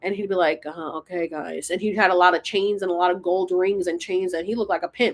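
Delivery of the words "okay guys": sluggish, drawn-out, slow, low, quiet teacher talk. Recalling a seventh-grade geography teacher, the speaker imitates him: imitating Mister Bentley's slow talk. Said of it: "And he was really slow".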